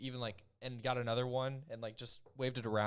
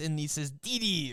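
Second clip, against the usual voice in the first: fake German-sounding accent; 3 semitones higher, 3 dB louder than usual. Complaining about a character's voice, then imitating it: Dexter voice. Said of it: "he talks like this".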